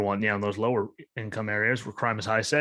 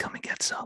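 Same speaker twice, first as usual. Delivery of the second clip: hushed, soft whisper, close to the mic. Leaning into the microphone to deliver a line, Joe Biden whisper. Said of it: "lean into the microphone and whisper like Joe Biden".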